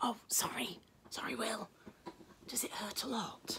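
soft, hushed whispered voice. Charlie apologizes to William, who has an earache, in a whisper. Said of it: "Said Charlie in a whisper".

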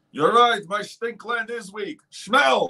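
high cartoon alien voice. Doing a bit before saying goodnight to everybody, in a Zoidberg voice. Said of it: "He does a wonderful Zoidberg".

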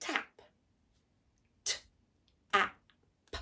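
robot voice, choppy, sounding chopped apart. Leading a sounding-out exercise, saying the word like a robot. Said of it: "we're going to try and speak like a robot".

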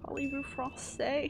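over-the-top, worst possible bad French accent. Asking a French question in the worst accent they could: exaggerated bad French accent. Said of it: "in the worst French accent I could".

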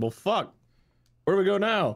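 very high-pitched, dismayed animal voice. Voicing the same animals after the cold hits texas: dismayed migrating animals. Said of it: "They're like".

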